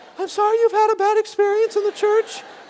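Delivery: very high, frightened voice. Retelling apologizing to a man who confronted him, retelling in a high voice. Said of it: "I can remember how high my voice was at this time".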